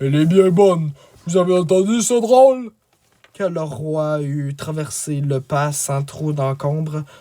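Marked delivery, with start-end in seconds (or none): 0.0-2.7 loud, amused, regal delivery, still laughing. Narrator reads the king turning to his barons, King Mark exclaiming. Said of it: "Arriva le roi Marc en personne. / Arriva le roi Marc en personne. / Arriva le roi Marc en personne".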